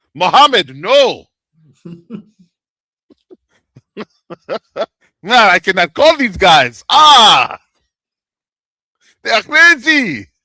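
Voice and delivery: loud, bad, fake Arabic accent.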